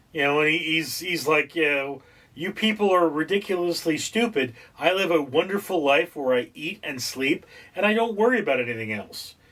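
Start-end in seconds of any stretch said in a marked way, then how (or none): none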